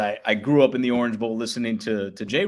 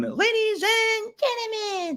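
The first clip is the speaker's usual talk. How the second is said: put-on very high tiny child voice, ring announcer style. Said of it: "I was already announcing back at the age of two".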